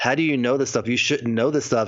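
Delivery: ordinary delivery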